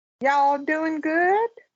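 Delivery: southern Texas drawl coming out. A host greets the co-host at the start of an episode, Southern Texas drawl. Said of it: "Southern Texas draw is coming out".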